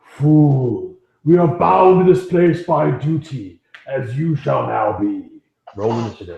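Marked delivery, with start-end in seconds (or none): 0.1-5.2 ghostly voice with drawn-out "fool". A game master voices two ghostly images speaking to the players, ghostly images' voice. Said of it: "you hear the two images speak".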